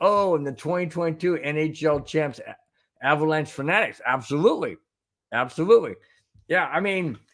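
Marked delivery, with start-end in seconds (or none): none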